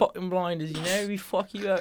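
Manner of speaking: Australian-British hybrid accent. Echoing the other speaker's threat bit, in an Australian-British hybrid accent. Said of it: "The little known Australian-British man hybrid".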